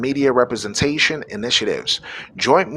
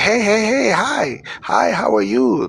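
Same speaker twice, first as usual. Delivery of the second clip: put-on flirtatious man voice, pitched higher; 7 semitones higher than usual. Acting out men throwing money at women: imitating a man flirting. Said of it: "start trying to throw money at our women saying".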